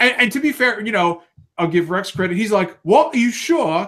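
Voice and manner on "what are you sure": bad, pitched-up British accent. Retelling a scene, the speaker voices Rex answering Pyra in a horrible British accent. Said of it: "they've all got these horrible British accents".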